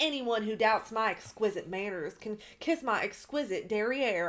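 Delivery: put-on Southern country Georgia accent, laid on thick and heavy. Quoting a tagline the way Sutton said it: imitating Sutton's strong country accent. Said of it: "she sounded more country than ever in that".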